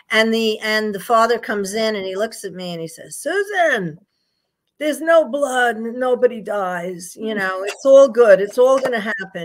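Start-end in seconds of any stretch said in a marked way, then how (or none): 3.1-9.4 thick, heavy put-on Yiddish-inflected accent, raised pitch.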